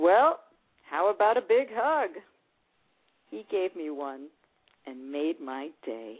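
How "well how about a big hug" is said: playful teasing tone. At the door after seeing a movie together, she teases him; teasing. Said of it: "I parodied a line from the movie we had just seen and teased".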